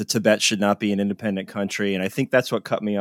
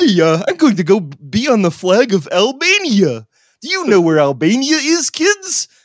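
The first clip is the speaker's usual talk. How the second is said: very high pitch, swooping up and down; 12 semitones higher, 7 dB louder than usual. Joking about the bird on the flag of Albania: bad Big Bird voice. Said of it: "That's a shitty Big Bird".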